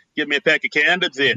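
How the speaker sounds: Boston accent, condoms said as candoms. Joking about how Boston kids talk, Boston accent. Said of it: "That's what the Boston kids say".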